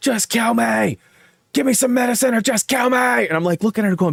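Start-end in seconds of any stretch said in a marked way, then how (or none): 0.0-3.0 high, desperate, anguished, pained screaming. Retelling a scary night in the ER, imitating his wife's screaming. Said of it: "my wife was in the E R screaming".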